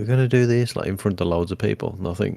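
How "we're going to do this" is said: mock big presenter-style shout, high-pitched and hyped. Describing an awkward YouTuber in front of crowds: imitating someone shouting. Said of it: "he just shouts a lot and says".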